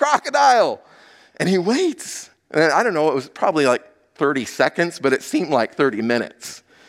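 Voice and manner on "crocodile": very high, desperate, urgent yell. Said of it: "so I yell out again".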